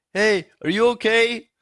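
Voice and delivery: very high, long-stretched, drawn-out yell. Retelling a night of food poisoning, calling between bathrooms: imitating a yell. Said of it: "one of us would yell".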